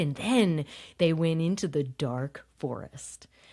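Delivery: expressive, sing-song storybook read-aloud intonation. Showing how one reads a story to a child: expressive storytelling intonation. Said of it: "if you're reading to a child, it comes naturally".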